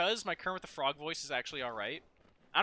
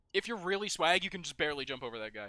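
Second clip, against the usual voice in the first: normal talking voice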